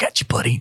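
whispering. Voicing a character who catches a falling companion: whisper. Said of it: "And I'm gonna whisper".

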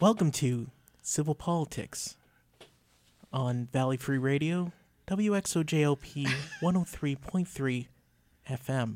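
very slow, deliberate, measured delivery. Demonstrating how to deliver the radio station intro for a clip, very slow and deliberate. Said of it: "talk very slowly and deliberately like this".

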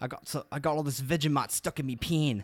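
fake Australian accent. Podcast host recalling their accent challenge episode, bad australian accent. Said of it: "I tried to do an Australian accent before".

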